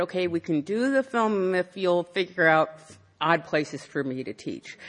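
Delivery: ordinary delivery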